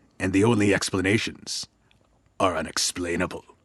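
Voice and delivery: booming trailer narrator voice. Reading the original show intro in movie trailer announcer style: Don LaFontaine trailer voice. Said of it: "you will hear the intonations of Don LaFontaine that go a little something like this".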